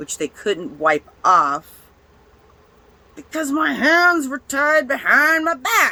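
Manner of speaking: getting angry. Recounting sitting tied up and sweating in the back of a car: angry. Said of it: "I'm getting a little angry".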